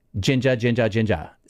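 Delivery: quick repetition, said three times fast. Saying the word three times when another speaker asks: said three times fast. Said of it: "Say it three times fast".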